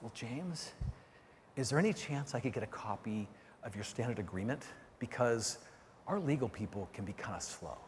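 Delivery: dropped to a very quiet, low, hushed undertone. Retelling what a guy said after looking around, retelling a lowered voice. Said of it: "he lowers his voice and he goes".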